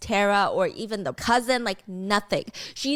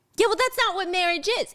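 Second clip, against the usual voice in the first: very high, piercing, shrill yell; 10 semitones higher than usual. Retelling a couple's breakup talk, the speaker does the man's reply, retelling a yell. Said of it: "He's like yelling at her".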